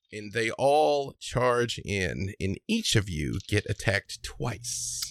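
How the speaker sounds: normal talking voice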